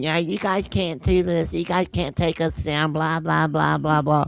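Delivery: acted, preachy, lecturing, sermonizing rant. Retelling what a woman said while she kept talking: imitating someone preaching. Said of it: "she goes on to start preaching".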